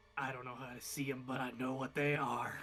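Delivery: low whispered voice. Voicing a whisper heard inside the listener's head, a very low whisper. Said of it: "a just a very low whisper in your head".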